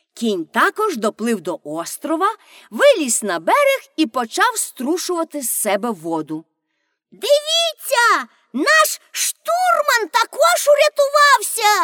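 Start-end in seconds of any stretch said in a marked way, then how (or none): 7.2-11.9 very high, gleeful, drawn-out joyful cry. Narrator reads a character's words to her companions as the horse arrives, a joyful exclamation. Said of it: "радісно вигукнула Пеппі".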